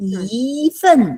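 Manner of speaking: yi with exaggerated big rising glide. Teacher telling students to exaggerate tones: exaggerated rising tone on yi. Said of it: "It has to go up".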